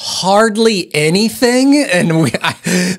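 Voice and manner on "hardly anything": very loud, much higher pitch. Retelling a four-year-old's answer in a group of kids, very loud. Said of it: "he very loudly goes".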